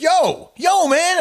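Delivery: shrill, very high, loud yelling shout. Retelling calling out to a passing guy he thought was Rick: retelling a yell. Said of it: "I was like yelling at him".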